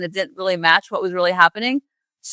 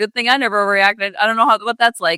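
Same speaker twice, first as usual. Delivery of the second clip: ordinary delivery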